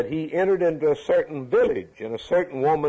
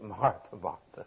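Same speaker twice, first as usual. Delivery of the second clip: mock tender, loving, very hushed, very quiet voice; 6 semitones lower, 10 dB quieter than usual. Reading scripture, showing how he said martha, martha: lovingly saying martha, martha. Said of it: "I can't think I can say it like he said it, ... That's lovingly".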